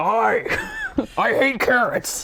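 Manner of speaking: loud, swooping, very slow, dragged-out voice. Showing the two impressions they have, first Eric impression. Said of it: "this is the two impressions I have".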